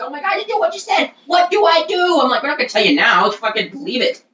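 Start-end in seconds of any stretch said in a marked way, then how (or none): 0.0-2.2 very high, melting-down shriek. Retelling how a man screamed at the speaker during a meltdown, imitating someone screaming. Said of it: "screaming at me like".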